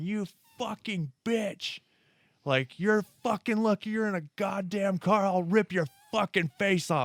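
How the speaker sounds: all-out raging yell, high and furious scream. Retelling shouting at a car that nearly hit his daughter: imitating himself screaming in rage. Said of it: "I was screaming".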